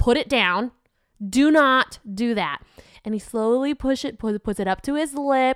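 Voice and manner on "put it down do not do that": put-on firm, stern voice. Recounting a warning given to him, retelling a firm voice. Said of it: "the firm voice and I was like".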